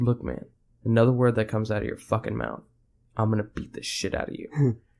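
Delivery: put-on calm, quietly menacing tone. Retelling a reply to someone who taunted them, imitating a calm threat. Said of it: "and I said calmly".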